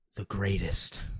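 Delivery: deep, exaggerated, corny whispered hush. Imitating a man saying it the corniest way possible, low whispery voice. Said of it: "Just like whispers. ... He's he's got a real low tone in his voice".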